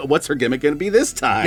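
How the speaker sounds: plain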